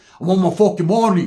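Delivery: Polynesian island dialect. Retelling an argument over money, voicing one Islander talking to another: Polynesian island dialect. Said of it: "their dialect comes out".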